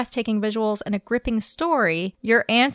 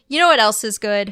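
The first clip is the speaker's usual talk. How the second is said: normal talking voice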